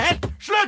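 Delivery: high, exasperated, outburst-like outcry.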